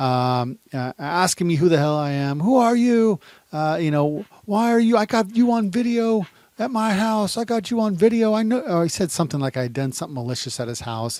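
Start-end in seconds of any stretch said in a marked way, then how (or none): 2.4-8.6 very high, loud, heated yelling. Retelling a stranger's questions at the car window: imitating a man yelling. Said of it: "he's yelling at me".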